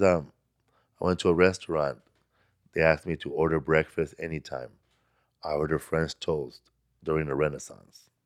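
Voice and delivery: deadpan comic delivery. Retelling one of a comedian's jokes, in a Steven Wright deadpan. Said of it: "He does like deadpan".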